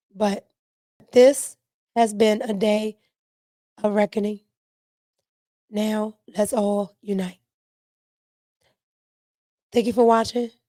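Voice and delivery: hoarse, strained, worn-out voice. Closing a video after a long day: hoarse, worn-out voice. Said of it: "My voice is shot".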